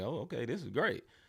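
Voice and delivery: mock easy chuckling, amused and laughing. Retelling a loss against Denver, imitating Shai laughing. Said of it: "Shai was just smiling, like, laughing, like".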